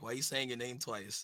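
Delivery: normal talking voice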